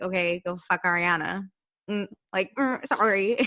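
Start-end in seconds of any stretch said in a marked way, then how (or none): 0.0-1.5 mock tart, sassy throwaway delivery. Retelling a reality show argument, imitating a sassy retort. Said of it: "Stassi in the background is like".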